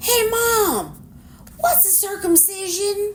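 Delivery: high, loud, drawn-out holler. Retelling how a son suddenly called out from the game room: imitating a yell. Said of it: "all of a sudden he yells out".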